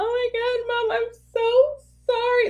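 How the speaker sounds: put-on teary sobbing voice, very high and drawn-out. Retelling how a daughter apologizes to her mom: imitating Linnea crying. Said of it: "Linnea will just cry".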